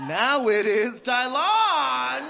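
delighted, high, loud, slow proclaiming voice.

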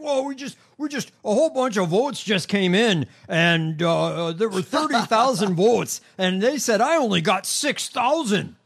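loud, drawn-out, halting, stumbling delivery. Retelling a late-night vote report: imitating Mike Lindell. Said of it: "he was doing this bullshit where he's like".

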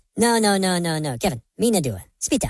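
squeaky cartoon creature gibberish. Describing cartoon characters, then showing how they talk: Minion voice. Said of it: "the little Minions that talk like this".

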